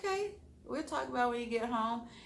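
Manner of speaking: soft, quiet reply tone. Retelling her reply to a man who wants to talk when he gets home: imitating own quiet reply. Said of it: "I was real like quiet about it".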